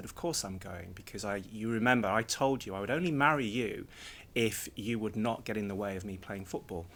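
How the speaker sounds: plain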